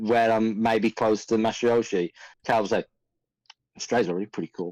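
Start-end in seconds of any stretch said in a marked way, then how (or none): 3.8-4.7 low, murmured mutter under the breath. Voicing a character muttering near another: muttered under breath in character. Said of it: "under my breath".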